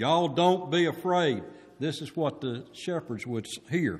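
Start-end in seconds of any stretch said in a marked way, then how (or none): 0.0-1.4 put-on big booming voice, slow and high. Acting out the words the shepherds would hear, booming voice. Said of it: "It was a booming voice".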